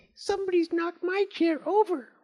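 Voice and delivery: squeaky, very high, small little voice. Narrator reading the three bears story aloud, in a squeaky Baby Bear voice. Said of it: "Baby Bear cried in a squeaky voice".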